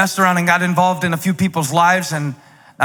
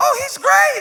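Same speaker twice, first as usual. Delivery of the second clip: unnatural, very high falsetto soprano note. Showing how people's voices go up when asked about a staff member, high falsetto. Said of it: "when they hit that falsetto, like unnatural soprano note".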